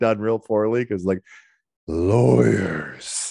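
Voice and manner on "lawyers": rough, creaky, drawn-out rasp.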